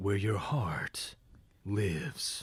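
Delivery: low, slow, whispered villain voice. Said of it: "are you Zemnis or are you Ansem?".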